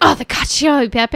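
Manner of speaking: hammy, showy, over-the-top theatrical waiter voice. Retelling a waiter repeating an order back: over-the-top theatrical waiter. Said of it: "Very, very over-the-top theater guy".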